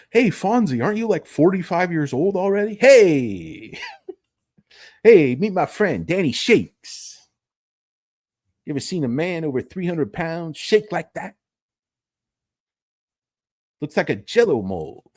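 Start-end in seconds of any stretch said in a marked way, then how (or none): 2.8-15.0 fake, put-on fifties man voice. Acting out a scene, a character introduces his friend Danny Shakes in a Fonzie-type voice. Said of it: "like a Fonzie type thing".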